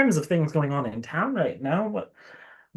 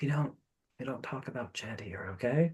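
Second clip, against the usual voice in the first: very quiet, hushed, secretive whisper; 4 semitones lower, 12 dB quieter than usual. Leaning in to another character in a game scene: whispering. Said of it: "lean in and whisper in her and just be like".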